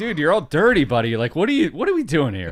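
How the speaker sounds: loud, animated, swooping casual friendly talk. Retelling Brian brushing off someone's back: imitating Brian. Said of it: "He's like".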